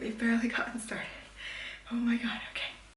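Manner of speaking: winded and puffing. Just starting back recording, already out of breath. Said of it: "I'm already out of breath".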